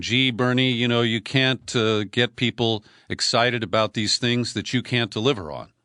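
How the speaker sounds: plain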